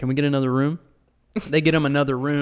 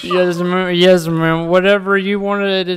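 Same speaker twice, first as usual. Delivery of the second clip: mock drunken slurring, higher and louder; 5 semitones higher, 8 dB louder than usual. Retelling talking to an older lady at a reception: imitating drunk slurred speech. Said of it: "Slurring speech".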